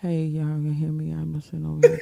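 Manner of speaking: put-on muffled voice like bad audio. On a call, showing someone how they come through: imitating Ken's muffled audio. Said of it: "this is how I'm gonna tell you how you sound".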